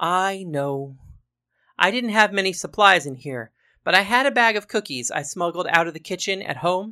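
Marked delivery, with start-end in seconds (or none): none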